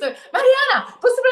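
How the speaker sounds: put-on shrill yell, very high. Acting out Mari reading WhatsApp messages aloud, shouting like Mari. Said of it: "ela já gritava assim, lendo".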